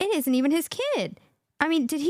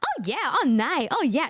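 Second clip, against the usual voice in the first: short, halting replies in very limited broken English. Imitating an acquaintance who barely speaks english answering small talk: imitating a woman with little english. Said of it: "This is how they talk".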